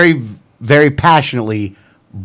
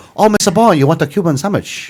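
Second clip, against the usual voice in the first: put-on Chinese-accented delivery; 4 semitones higher than usual. Trying a Cuban accent, the speaker slips into an accidental fake Chinese accent. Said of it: "you went from Cuban to, to Chinese".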